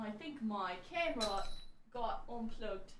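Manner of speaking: soft, odd-sounding voice. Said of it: "I don't know why I said it like that".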